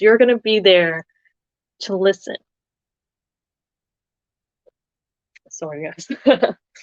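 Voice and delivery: voice catching with tears, choked up. Speaker tears up while advising listeners, then apologizes; tearing up. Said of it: "I'm tearing up just talking about this".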